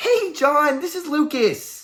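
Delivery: very high, very slow, swooping, corny, overly excited salesy cheer. Showing how not to open a phone call: overly excited, corny greeting. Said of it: "you don't want to be overly exciting. Don't go".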